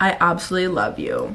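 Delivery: ordinary delivery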